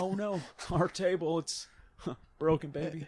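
put-on raspy Southern politician voice. Showing a politician's voice for a skit idea: Bill Clinton voice. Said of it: "Bill Clinton".

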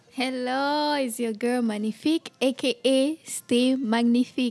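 loud, hyped, announcer-style MC voice. Greeting after being welcomed in and introducing yourself: like an MC. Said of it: "You sound like you about to transition into M C".

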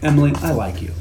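normal talking voice

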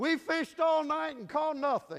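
shrill, very loud, high-pitched exasperated yell. Retelling the fishermen shouting back to the voice on the beach: imitating an annoyed shout. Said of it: "and I'm sure with some annoyance".

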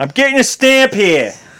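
put-on Boston accent, pitched very high. Retelling the stamp guy's line, in an accent that sounded Boston. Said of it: "That sounded Boston".

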